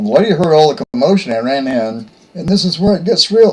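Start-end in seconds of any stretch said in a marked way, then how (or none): 2.3-3.5 high-pitched voice cracking, breaking mid-line. Speaker telling a story to listeners, voice cracking. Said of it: "my voice cracked just then".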